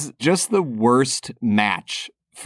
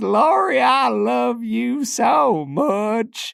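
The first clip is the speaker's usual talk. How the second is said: very high, drawn-out, creaky voice; 13 semitones higher than usual. Imitating how a movie character sounds when he talks: imitating Charlie McCorry's voice. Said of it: "He just kinda sounds like this".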